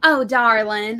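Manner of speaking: heavy, laid-on Southern Georgia drawl. Showing how much thicker the accent can go: thick Southern Georgia accent. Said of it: "I can go thicker".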